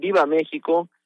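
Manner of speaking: ordinary talk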